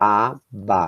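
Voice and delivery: abacate split, strongest stress on ca. Portuguese syllable lesson splitting abacate, stress on ca of abacate. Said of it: "Eu falo o K".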